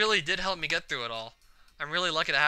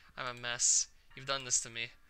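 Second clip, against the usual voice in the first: ordinary delivery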